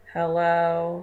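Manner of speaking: tired, lifeless, flat, sleepy monotone. Showing how not to answer the phone: a flat monotone hello. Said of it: "answering the phone just very monotone".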